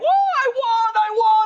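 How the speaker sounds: put-on child voice, very high, shrill, excited yelling. Speaker retells a kid jumping on a chair after winning; retelling a kid's screaming yell. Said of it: "screaming, yelling".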